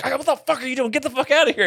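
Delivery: mock furious cursing yell, very high-pitched. Retelling landing on stage and hitting the bassist: imitating his angry yelling. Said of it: "he was so mad".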